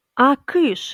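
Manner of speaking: loud, high-pitched shout. The grandmother shoos her grandson Slavko away from the window with a shout. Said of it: "крикнула баба".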